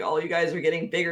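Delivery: exasperated, annoyed, complaining fatherly tone. Retelling a short character's complaint that everyone grew taller: imitating Levi as an annoyed dad. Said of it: "And he sounded like a dad".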